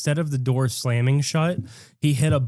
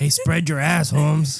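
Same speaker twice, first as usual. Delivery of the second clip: jokey put-on Mexican accent; 2 semitones higher than usual. Joking about a button that slams the door: put-on mexican accent. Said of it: "You sound like Mexican".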